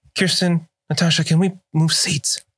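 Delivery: whisper meant to be overheard. Voicing a character asking two others to move seats: loud stage whisper. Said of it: "in a whisper, but very clearly loud enough".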